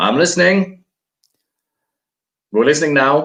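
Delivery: very high, shouted yelling. Narrating a game scene after a pony collapses, voicing Formatore yelling back. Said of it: "you hear Formatore yelling back".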